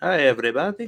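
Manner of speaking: silly, high-pitched Italian accent. Voicing the cricket as it greets everybody, Asshole the Cricket voice. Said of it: "that's the cricket's accent?".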